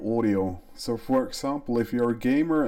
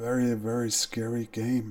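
soft whisper, quieter and slower; 3 dB quieter than usual. Speaker turning back to the mic after a scary game, whispering. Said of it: "I'm gonna start whispering a little bit".

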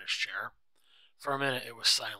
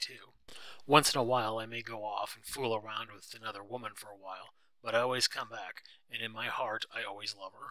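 plain

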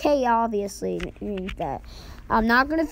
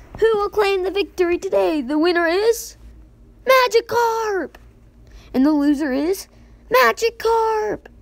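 high, stupid, weird put-on voice. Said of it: "stop with that stupid voice of mine".

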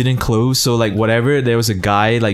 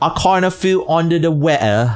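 put-on British accent, pitched up; 6 semitones higher than usual. Mocking how a british person speaks, the speaker uses a mock british accent. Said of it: "You know how a British person speak?".

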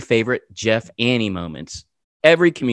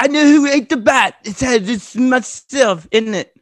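higher put-on British rock star voice; 12 semitones higher than usual. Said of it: "you kind of sound like, um, uh, what's his name? [name]".

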